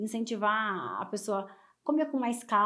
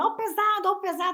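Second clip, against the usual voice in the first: mimicked yelling, pitched much higher; 9 semitones higher, 10 dB louder than usual. Recalling early mornings in Brás buying clothes, the speaker imitates people yelling. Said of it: "o povo gritando".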